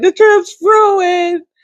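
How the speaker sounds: very high, tearful sobbing voice. Retelling what a crying mother said: imitating someone crying. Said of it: "my mom crying and saying".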